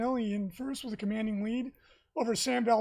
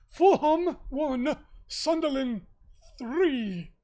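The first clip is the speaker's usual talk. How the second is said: put-on plummy, posh old British gentleman voice, very slow; 3 semitones higher, 6 dB louder than usual. Imagining the Sunday night football scores read out in a posh old-man British accent. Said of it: "a very posh old man would read the football scores. ... That's how I imagine it was done".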